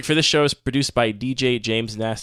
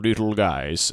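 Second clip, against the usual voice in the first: mechanical robot voice, lower; 2 semitones lower than usual. Describing a strange video, repeating what its voiceover says: robot voice. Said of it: "It's a robot voice reading".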